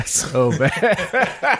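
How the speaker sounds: high, slow laughing cringe.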